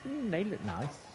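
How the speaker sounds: soft, flamboyant, put-on camp voice.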